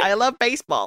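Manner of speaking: put-on failed Chicago accent. Describing a party-loving Chicago lady from an animated show, quoting her in a bad Chicago accent. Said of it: "I can't do a Chicago accent".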